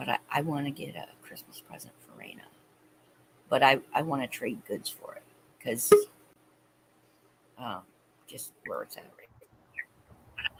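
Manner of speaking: hushed whisper. Speaking so the person the present is for won't hear, whispering. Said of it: "I gotta whisper because I don't want her to hear me".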